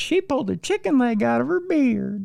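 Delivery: high, put-on little-kid voice. Imagining little kids reacting at a circus, imitating little kids talking. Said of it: "the little kids would be like".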